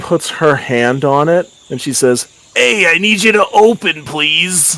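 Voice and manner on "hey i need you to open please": put-on New York accent, pitched up. Narrating a scene, the storyteller voices a character: new york accent. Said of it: "speaking in a New York accent".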